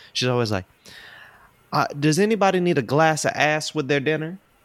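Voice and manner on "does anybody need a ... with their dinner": put-on thick, strong Southern accent, pitched up. Describing how the speaker's mom asks at dinner, imitating mom's strong southern accent. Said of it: "my mom has a very strong Southern accent".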